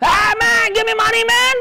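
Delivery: very high-pitched, stretched-out, drawn-out screeching scream. Acting out a beggar who starts screaming for money: imitating a screaming beggar. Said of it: "started screaming at you".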